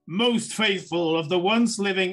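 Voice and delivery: booming, loud resounding voice. Voicing a voice that greets the party as a door opens: booming voice. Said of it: "this booming voice says".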